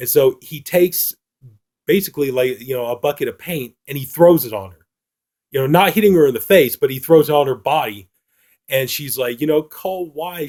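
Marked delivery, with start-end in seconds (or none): 9.6-10.5 high, tearful pleading, near crying. Retelling a film scene where the woman is in tears: imitating tearful pleading. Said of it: "the woman's in tears".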